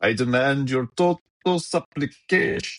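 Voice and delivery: put-on European accent, pitched very high. Joking about Downey's attempted accent being compared to Nandor, in a Nandor voice, put-on European accent. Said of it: "trying to do a like European accent".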